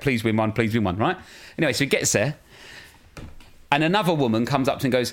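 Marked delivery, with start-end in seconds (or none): 0.0-1.0 put-on, mock-desperate begging tone. Retelling her daughter begging while Andy tries again to win, imitating desperate begging. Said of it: "my daughter's like desperately going".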